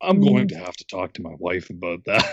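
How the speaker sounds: put-on grown-up voice, dropped a few notes, very low. Retelling answering the cable company as a kid, voice dropped a couple notes. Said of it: "drop the voice a couple notes".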